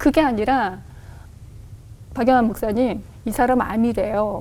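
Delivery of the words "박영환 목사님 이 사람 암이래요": deadpan, dry, flat, emotionless delivery. Recreating how he once told a church deacon something: deliberately flat, dry tone. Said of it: "아무렇지 않게 ... 건조하게".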